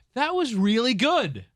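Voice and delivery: put-on very high, slow, mildly surprised admiring tone. Imitating how the musical's director praises a take but wants another: slightly surprised compliment. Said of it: "the intonation that he uses when, when he's like, he wants you to do it again".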